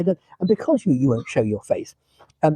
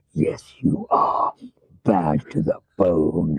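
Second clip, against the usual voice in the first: mock sinister voice, much lower; 10 semitones lower than usual. Speaker recalls a man at a debrief insisting he is bad, retelling a sinister voice. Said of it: "with that kind of sinister voice".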